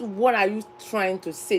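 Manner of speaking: normal talking voice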